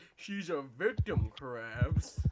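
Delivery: very loud, slow, drawn-out, swooping cartoon drawl. Quoting a funny clip in Plankton voice. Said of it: "his Plankton impression".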